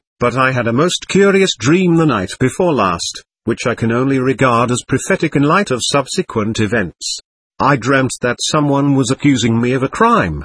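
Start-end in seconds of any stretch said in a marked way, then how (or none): none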